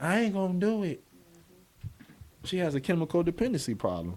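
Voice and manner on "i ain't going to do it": mild, gentlest voice, pitched up. Retelling a wife's refusal at the table: imitating a very soft voice. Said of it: "She said it with the softest voice".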